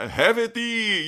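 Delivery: high, slow mock archaic knight speech.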